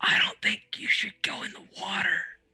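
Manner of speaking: hushed, quiet whisper. In a tabletop game, a player's character speaks to a companion, whispering. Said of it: "I whispered to Zandak".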